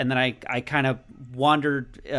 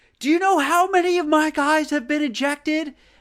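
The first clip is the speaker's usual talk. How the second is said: very high-pitched, shrill screaming; 4 dB louder than usual. Retelling a manager screaming at the umpire: imitating Mike Shildt screaming. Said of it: "he's actually screaming at the ump".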